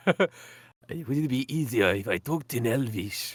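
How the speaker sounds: put-on accent somewhere between French and Russian. Voicing a character who offers to talk in Elvish, in an accent between French and Russian. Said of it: "Sort of somewhere between French and Russian".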